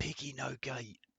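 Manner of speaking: whispered voice. Playing through a scene, whispering back to the others. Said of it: "I whisper back".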